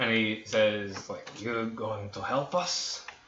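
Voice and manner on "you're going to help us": put-on boozy, drunk-sounding old man character voice. Voicing a drunk older man asking if they'll help: drunk older man voice. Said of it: "Luvash, who is drunk, this older man".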